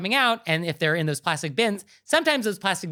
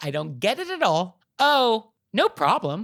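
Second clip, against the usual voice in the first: mock clueless, oblivious tone; 2 semitones higher than usual. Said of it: "she says in a tone which is like".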